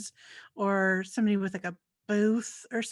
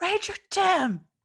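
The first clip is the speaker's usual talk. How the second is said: full-throated, really loud, very high hollering shout; 10 semitones higher, 3 dB louder than usual. Playing a character at a shack, calling the ranger: yelling really loud. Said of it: "Just really loud".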